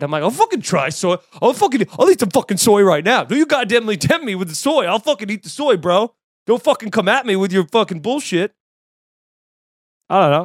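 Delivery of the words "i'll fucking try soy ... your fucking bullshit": all-in, full jock bro voice with bravado. Answering someone asking whether to try soy, full jock bro voice. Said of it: "Just like full jock bro".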